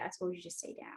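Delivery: very quiet breathy whisper, cool and dominant. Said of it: "whisper and be like".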